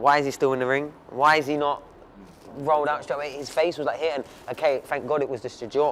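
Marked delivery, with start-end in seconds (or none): none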